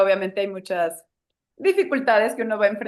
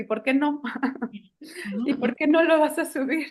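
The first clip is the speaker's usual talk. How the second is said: put-on tiny, higher-pitched little child's voice; 5 semitones higher than usual. Retelling what a daughter said to her mother: imitating a little child's voice. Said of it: "una vocecita me dijo".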